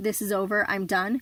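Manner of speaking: ordinary talk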